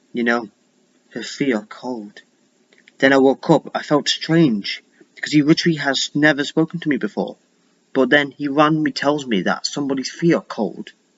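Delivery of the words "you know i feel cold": gentle, unhurried, drawn-out, soft, hushed voice. Retelling what a man in a recurring dream finally said to the dreamer, slow, soft voice. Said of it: "he says in a slow, soft voice".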